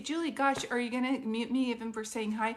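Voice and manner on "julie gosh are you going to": usual speaking voice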